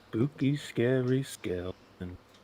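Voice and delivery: soft, casual, tossed-off delivery. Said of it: "That was the lame joke customer voice".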